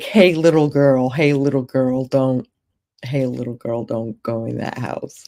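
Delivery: unsettling, creepy put-on street voice. Retelling the homeless man's warning to the girl: imitating a creepy homeless man. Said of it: "Which sounds creepy as fuck".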